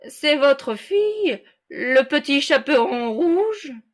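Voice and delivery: put-on sweet disguised voice, high and swooping. Reading a fairy tale aloud, the wolf at the door: wolf disguising his voice. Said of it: "dit le loup en contrefaisant sa voix".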